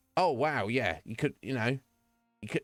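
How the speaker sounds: put-on sarcastic tone. Describing raids, the speaker quotes a streamer answering raiders, imitating the streamer's sarcastic tone. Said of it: "be like sarcastically say".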